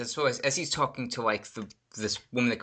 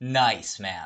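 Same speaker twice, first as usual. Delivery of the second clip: mock, really sarcastic tone, lower pitch; 3 semitones lower than usual. Retelling what he said to a guy he nearly bumped into, really sarcastic. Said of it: "like really sarcastic".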